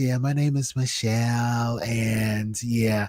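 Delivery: low, slow, drawn-out sultry voice. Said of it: "with the really sexy voice".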